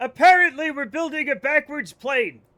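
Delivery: heated, worked-up, very loud outburst. Answering what we are building in Kerbal, heated. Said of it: "Sorry, I got heated".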